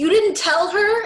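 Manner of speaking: blurted really loudly, very high-pitched. Recapping a show scene, quoting a character's reply, retelling a really loud line. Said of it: "And Seth really loudly is like".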